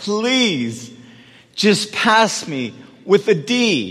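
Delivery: put-on, very slow, drawn-out pleading. Recalling a note written to a professor, acting out a plea. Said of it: "and I pleaded".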